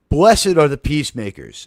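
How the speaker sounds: ordinary delivery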